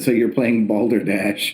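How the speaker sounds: ordinary talk, nothing marked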